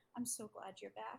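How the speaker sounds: soft, close-in half-whispered words. Voicing a character hugging a returned friend: half-whispering in character. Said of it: "he whispers to, uh, to them in, uh, in Elvish".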